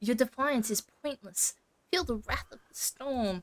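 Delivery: high-pitched cat voice. Reading a side story aloud with no voice acting, Woofdale cat voice. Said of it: "What voice am I going to give the cat?".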